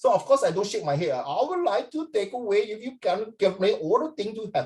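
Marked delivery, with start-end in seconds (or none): 1.2-4.7 put-on Indian English accent. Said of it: "why are you mimicking me?".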